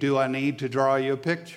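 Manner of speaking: snide, smart-mouthed, sarcastic delivery. Retelling what people said when something wasn't understood: imitating a sarcastic smart remark. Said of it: "And they would say it smartly, sarcastically".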